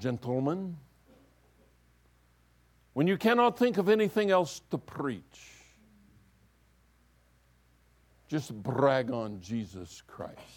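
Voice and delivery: speaking in a Scottish brogue. Quoting the old seminary theology professor, in Peter Connolly's Scottish brogue. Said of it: "used to say in his Scottish brogue".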